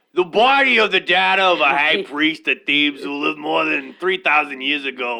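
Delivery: put-on Boston accent. Host quoting a man promoting his mummy unwrapping, in a boston voice. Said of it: "Boston voice".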